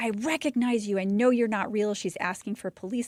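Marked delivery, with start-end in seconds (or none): 0.0-1.9 put-on wild screaming in an accusing outburst. Telling how an injured woman screamed at first responders, imitating someone screaming. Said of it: "She's screaming at them like".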